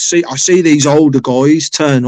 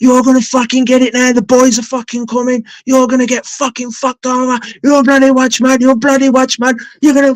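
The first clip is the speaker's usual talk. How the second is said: put-on enraged ranting, pitched very high; 10 semitones higher than usual. Retelling a man kicking the door in a rage; imitating an enraged man. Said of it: "he goes in a rage".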